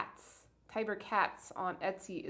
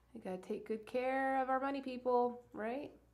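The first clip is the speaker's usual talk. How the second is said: mock-earnest sarcasm, pitched up; 5 semitones higher than usual. Commenting on the Senate bailouts of Wall Street: sarcastic. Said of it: "I'm being sarcastic, for sure".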